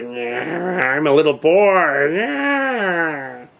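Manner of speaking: put-on very slow, drawling old man voice. Retelling a movie character who claims to be a little boy: imitating an old man voice. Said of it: "he had sort of an old man voice".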